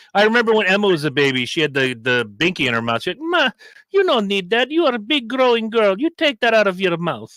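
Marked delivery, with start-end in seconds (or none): 3.2-7.2 put-on very heavy, pitched-up Italian accent. Quoting an italian relative speaking to a baby, imitating italian accent. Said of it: "very much Italian, like fresh off the boat".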